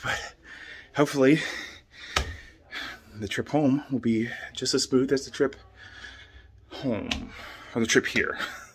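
breathless, tired, out of breath. After a sharp incline on a trip, the speaker talks out of breath. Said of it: "I'm out of breath".

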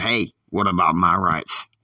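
ordinary talk, nothing marked

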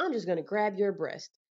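ordinary talk, nothing marked

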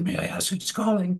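normal talking voice

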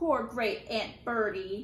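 slow, patronizing, condescending drawl. An officer standing by a casket answers a young woman: condescending. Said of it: "he said in a condescending voice".

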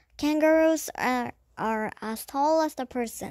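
ordinary delivery

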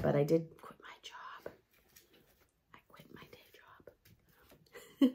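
hushed, very slow, guilty-sounding whisper. Sharing news they feel guilty about, the speaker tells listeners, whispering. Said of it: "I have to whisper because I feel guilty about it".

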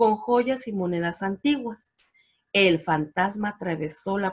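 ordinary delivery

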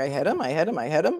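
question-like rising intonation on him. Retelling how she said it as a question: rising like a question on him. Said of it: "she said it as a question, like".

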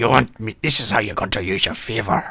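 put-on pirate voice. Game master voicing a dwarf ship captain to the players: put-on pirate voice. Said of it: "is [name]. And he's wearing a captain's hat. And it looks a bit out of place on him. Looks like it shouldn't belong on his head. And you can see that it's a dwarf. ... Arr, I'm sorry, but I gave the last spots away to [name]. ... That's the most growling toilet brush I've ever heard of".

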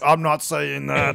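gritty, rough, creaky put-on character voice. Imitating Arnold Schwarzenegger refusing a script line: Arnold Schwarzenegger voice. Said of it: "That's my Arnold impression".

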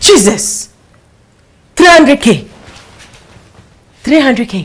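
screamed, high and loud. Hearing that someone's pay is about 300K, screaming. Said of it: "Why are you screaming?".

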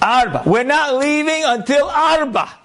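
mock very high, long-stretched shouting. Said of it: "some Israeli guy starts yelling".

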